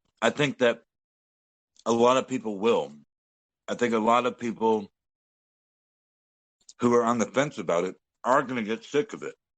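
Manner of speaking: speaking with a mouthful of food. Talking with the guys while eating, talking with mouth full. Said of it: "Mouthful of food".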